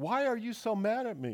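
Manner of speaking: put-on tearful little boy. A parent retells their three-year-old son's reply at bath time, imitating a child about to cry. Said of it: "his little lower lip started quivering".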